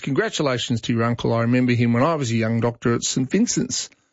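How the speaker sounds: ordinary talk, nothing marked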